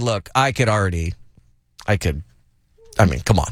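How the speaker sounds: normal talking voice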